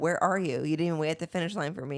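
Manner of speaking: ordinary delivery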